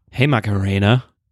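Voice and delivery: low, sassy, attitude-laden put-on voice. Asked to try it another way, the speaker answers in a sassy voice. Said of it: "Can you do it in a sassy voice?".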